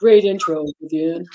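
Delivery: deep, low-pitched voice. Speaker retells a man's words to the speaker on stage, imitating his deep voice. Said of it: "he looked at me with that deep voice".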